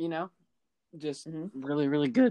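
voice breaks, cracking on "really good". Agreeing on the Rams as seventh seed, with a voice crack. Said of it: "that was a voice crack".

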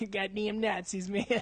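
put-on California stoner voice. Mocking an actor's bad movie accent: Brad Pitt as California stoner. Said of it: "That was like California stoner".

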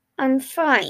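forced out through clenched, gritted teeth. A man with a cut hand, being tended, insists he is fine: through gritted teeth. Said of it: "he lied through gritted teeth".

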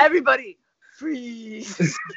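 loud, sinister, evil put-on European accent. Quoting a character after mentioning the movie, in an evil European accent impression. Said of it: "He's like some evil European accent".

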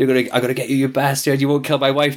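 screaming with full emotion. Describing a man who screamed down the intercom: retelling a scream.

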